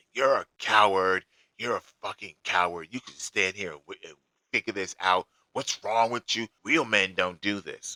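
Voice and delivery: half-yelled, mildly yelling scolding tirade. Retelling a phone call where a woman yelled at the speaker: acting out her yelling. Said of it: "And she's yelling".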